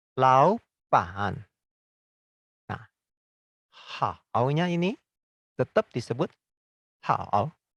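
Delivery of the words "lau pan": rising second tone on lau, pitch lifted. Mandarin tone sandhi lesson, lau joined with pan: rising tone on lau. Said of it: "lau-nya ini kan berubah menjadi nada dua toh. Maka disebut lau pan".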